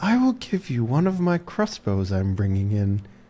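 very quiet, hushed half-whisper, close to the ear. Offering the sheriff a secret deal in the game: half-whispering a bribe. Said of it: "I whisper into your ear".

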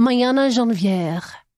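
slow, French-style pronunciation.

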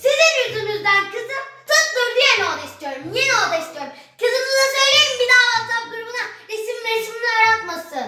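agitated, worked-up, demanding, high-pitched outburst. Character arrives upset and is told to calm down, worked up. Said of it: "biraz sakin olur musun?".

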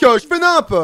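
high, loud, panicky voice.

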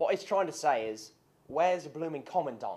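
fake, put-on English accent. Character restating another's demand to see the leader, fake english accent. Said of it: "Why do y'all use that English accent?".

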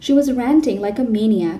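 ordinary delivery

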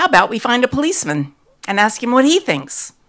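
trembling angry voice. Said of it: "I said, shaking now".

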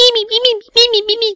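very high, loud, helium-like squeak. Mocking a woman's public speaking, in a squeaky Beaker voice. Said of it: "She's got this squeaky Fromm on helium voice".

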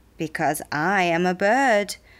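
usual speaking voice

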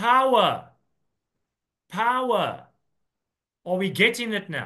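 stern, severe, pressing hard on each "power". Repeating a word from scripture to the listeners; stern. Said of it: "I'm saying it sternly".

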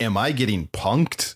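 ordinary talk, nothing marked

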